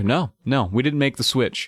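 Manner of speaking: normal talking voice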